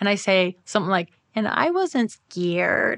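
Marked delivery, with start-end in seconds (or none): 1.3-3.0 put-on very slow, small child's little girl voice. Retelling what was said under hypnosis: imitating own little girl's voice. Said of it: "my voice literally changed to a little girl's voice".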